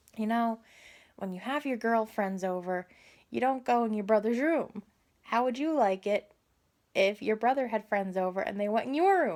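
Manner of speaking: ordinary talk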